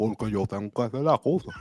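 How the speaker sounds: mumbled Spanish, Cuban-sounding. Mocking a boxer's speech: David Morrell impression, marbles in mouth. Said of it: "he talks like he's got marbles in his mouth".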